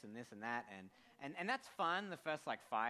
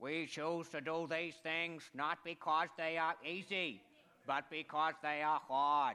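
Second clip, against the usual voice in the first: loud, podium-style oratorical delivery; 2 semitones higher, 5 dB louder than usual. In a guessing game where listeners shout out which president it is, do your best Kennedy impression. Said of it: "my best impression of a U.S. president".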